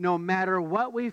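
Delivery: ordinary delivery, nothing marked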